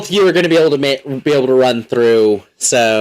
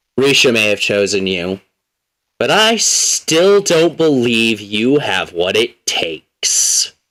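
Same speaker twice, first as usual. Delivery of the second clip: gravelly, stony, rock-like voice; 3 semitones lower than usual. A voice speaking in a character's mind, like a boulder, gravelly voice like a talking rock. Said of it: "You hear a gravelly voice, as if a rock was talking to you".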